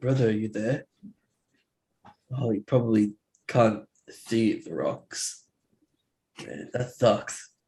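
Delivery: speaking in a whisper. Playing a character who whispers into a rock to an absent brother: whispering. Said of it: "I whisper into it".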